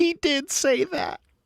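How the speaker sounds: very high, blubbering voice, talking through sobs. Retelling how Susanna reacted to the remark, imitating Susanna weeping. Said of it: "weeping goes".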